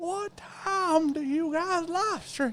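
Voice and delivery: very high-pitched, slow put-on grandpa voice. Retelling how an old viewer asks about stream times: imitating Old Father Time. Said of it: "And he says it like that".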